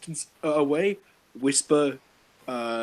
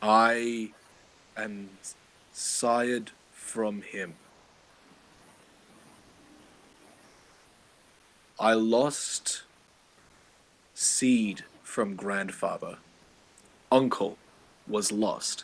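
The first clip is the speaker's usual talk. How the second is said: hushed, quiet voice, lower; 5 semitones lower than usual. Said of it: "because I don't wanna say this very loudly".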